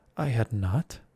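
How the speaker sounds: furious, cutting, sharp, very angry cry. As the Mouse, snapping back at Alice's question, sharp and very angry. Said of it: "cried the Mouse sharply and very angrily".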